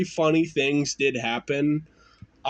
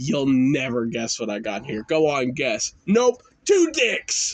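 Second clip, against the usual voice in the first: put-on smug, self-satisfied voice; 3 semitones lower than usual. Retelling showing friends a bag as a kid: imitating own smug voice. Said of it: "saying it the most smug way".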